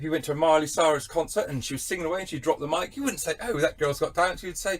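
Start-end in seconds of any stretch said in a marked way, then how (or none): none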